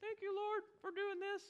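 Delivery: very high, soft, ladylike voice. Telling the story in verse 13, the speaker does an impression of a lady. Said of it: "That's my best impression of a lady".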